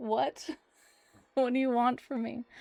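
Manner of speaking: sleepy dog character voice. Voicing a pet who was woken from a nap: voicing the napping dog. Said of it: "he's like".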